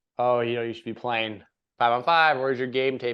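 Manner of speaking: ordinary talk, nothing marked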